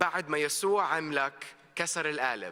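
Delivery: quickly spoken Arabic. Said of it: "My grandma always told me in Arabic".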